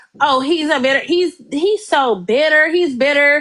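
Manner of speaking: ordinary talk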